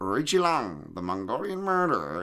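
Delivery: creepy, swooping horror monster villain voice. Imitating someone's translator at a press event, in a Hitchcock monster villain voice. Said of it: "he sounds like a Hitchcock monster antagonist".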